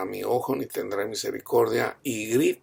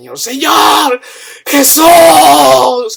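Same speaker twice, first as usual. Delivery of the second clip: booming, very high, loud powerful cry, Jesús drawn out; 17 dB louder than usual. Recounting a dream, the speaker calls out to the Lord, retelling a powerful shout. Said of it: "así con una voz potente".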